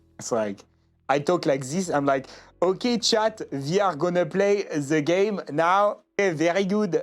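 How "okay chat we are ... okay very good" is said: heavy, cartoonish video-game French accent. Streamer imitating how their early English streams sounded, thick French accent. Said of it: "you sound like a, a French video game character".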